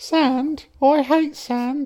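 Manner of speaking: very high put-on Cockney urchin accent. Quoting a Star Wars line, slipping into a Cockney urchin voice. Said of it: "I'm turning to Cockney urchin".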